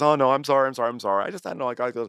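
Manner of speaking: jokey, charming tone laid on thick. Describing how Jax turns his charm on, imitating Jax's jokey apology. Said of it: "He does that kind of, like, jokey thing".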